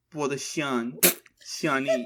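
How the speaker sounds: put-on baby-talk, little-kid voice. Reading a novel aloud, voicing a young character offering a bowl: babyish child voice. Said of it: "ready to be baby".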